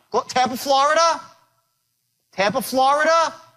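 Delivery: upbeat rising pitch at the end of Florida. Demonstrating a phone call technique, repeating the caller's location with voice rising at the end. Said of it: "When you raise your voice up like that".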